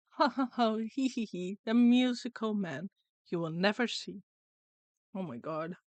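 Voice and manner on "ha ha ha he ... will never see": taunting, mocking, chittering creature voice. An unseen voice speaks into the listener's ear: chittering, mocking voice. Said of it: "chitters mockingly into your ear".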